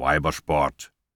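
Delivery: with a snort. A man answers a question about which sport he plays, snorting. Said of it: "schnaubte Maddox".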